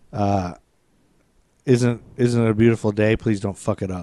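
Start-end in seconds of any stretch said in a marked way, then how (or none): none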